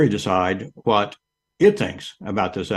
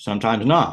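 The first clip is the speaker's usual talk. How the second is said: ordinary talk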